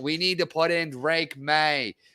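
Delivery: terrible put-on Boston accent. Imitating callers on boston radio networks: terrible boston accent. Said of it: "that was a terrible Boston accent".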